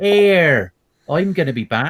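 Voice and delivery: put-on slow, deliberate, high Cornish-accented movie voice. Imagining a famous film line said in a Cornish accent: Arnold Schwarzenegger in a Cornish accent. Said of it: "and it was all Cornish".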